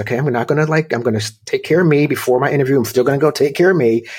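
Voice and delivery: plain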